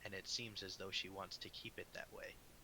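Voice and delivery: hushed half-whisper, aside. Speaking in character to another character: half-whispering. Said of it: "I whisper to him and say".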